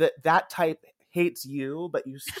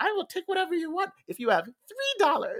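very high, swooping, put-on old witch voice; 14 semitones higher than usual. Retelling a comedy bit where a partner plays an old witch; old witch voice. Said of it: "like this old witch".

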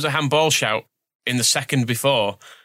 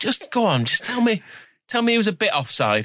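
put-on high, pleading, coaxing beg; 8 semitones higher than usual. Retelling the referee begging the linesman after the goal: imitating Darren England begging. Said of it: "he was begging the linesman".

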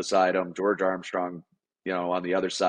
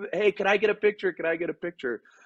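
very high, shrill shouting, pitched way up; 12 semitones higher than usual. Telling a draft-day story, retelling how mom started yelling out of nowhere. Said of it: "she's yelling at Wayne Gretzky".

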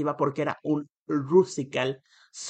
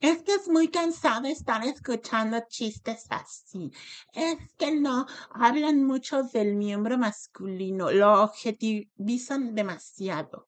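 put-on high, drawn-out, sneering mocking voice; 8 semitones higher than usual. Reading out critical tweets received, in a mocking voice. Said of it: "los voy a decir hasta con voz de burla".

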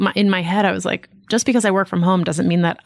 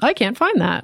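fake automated assistant voice; 3 semitones higher than usual. Retelling what the kitchen speaker says when it can't find a podcast: imitating Alexa. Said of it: "she's like".

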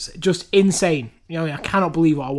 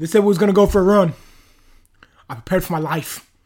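loud, raised, put-on hard-man voice; 3 semitones higher, 5 dB louder than usual. Trying an impression after the other speaker's attempt: David Goggins voice. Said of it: "That's not bad".

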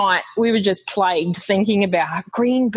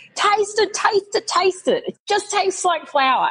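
very high, insistent, urgent shouting; 11 semitones higher than usual. Recalling the night he burst into the kitchen, the speaker mimics him: imitating someone shouting. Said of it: "he was shouting".

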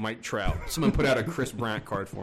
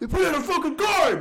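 put-on angry scream, much higher, louder; 6 dB louder than usual. Retelling how he screamed when a card came out: retelling a mad scream. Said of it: "He just screamed so loud".

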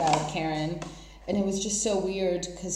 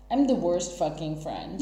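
ordinary delivery

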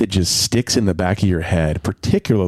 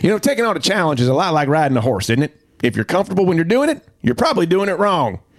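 Kansas accent, pitched very high; 9 semitones higher than usual. Asked by your co-speaker to do a favorite quote in character, put on a Ted Lasso accent. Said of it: "Do you want to do this one in a Ted Lasso accent?".

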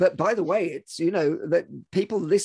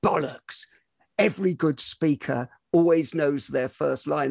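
normal talking voice

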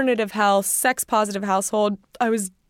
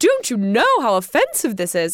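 put-on agitated British woman voice. Retelling an email from an agitated British lady: imitating a hopped-up British lady. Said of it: "some hopped up British lady who's like".

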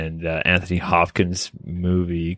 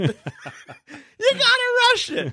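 put-on scream, pitched higher. Retelling screaming at a guy being watched: imitating own screaming. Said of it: "I'm screaming at this guy".

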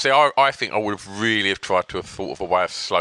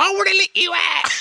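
really high-pitched voice. Speaker retells a man's recorded message played to a woman, in a really high-pitched voice. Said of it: "in a really high pitched voice going".

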